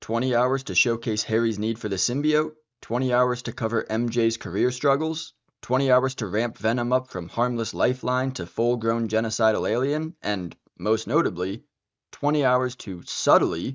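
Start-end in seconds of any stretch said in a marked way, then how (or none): 13.0-13.7 emphasis on 'subtly'. A speaker breaking down how a game's story builds up, stressing 'subtly'. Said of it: "emphasis on subtly".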